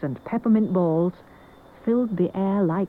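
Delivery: ordinary delivery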